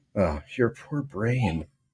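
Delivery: mock sorrowful, pitying tone, saddest inflection throughout. Quoting what she said during an appointment, imitating a sad, pitying tone. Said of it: "the saddest inflection on the whole phrase".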